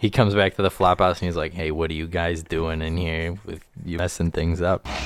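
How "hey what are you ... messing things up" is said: acted, in-character confrontational tone. Showing another speaker an impression of an actor's movie line: Gary Sinise impression. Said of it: "did you hear my Gary Sinise impression".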